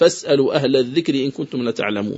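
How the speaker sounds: plain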